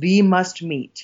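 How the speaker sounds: put-on strong Hungarian accent. Retelling a woman's greeting while shaking the speaker's hand, in a strong Hungarian accent.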